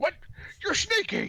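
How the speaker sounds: very high, jumpy, startled goblin yelp. Voicing a goblin monster surprised by a sneaky player: goblin dm voice, startled. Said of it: "He says".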